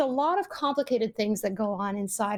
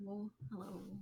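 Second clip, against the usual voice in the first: very quiet, soft and gentle voice; 19 dB quieter than usual. Answering a greeting after being put on the line: soft and gentle voice. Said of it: "you're very soft and gentle".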